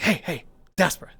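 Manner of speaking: whispered, breathy voice. Retelling how a neighbor got their attention: imitating someone whispering. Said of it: "whispering to me".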